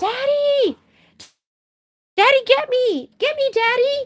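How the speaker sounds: very high, slow, gleeful, joyful happy dog voice. Voicing what the barking dog is saying, joyful dog voice. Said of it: "That's a joyful bark, like".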